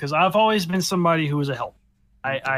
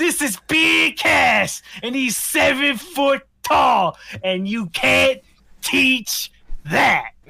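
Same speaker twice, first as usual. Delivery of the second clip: put-on heavy New Jersey accent, pitched higher; 9 semitones higher, 4 dB louder than usual. Speaker praising a WWE talker imitates his ring introduction, Enzo Amore New Jersey accent. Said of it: "that's a New Jersey accent".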